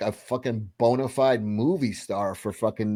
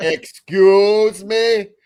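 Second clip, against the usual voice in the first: higher, louder put-on sassy Austrian voice; 9 semitones higher, 9 dB louder than usual. Joking about a remake, Arnold Schwarzenegger as sassy lady.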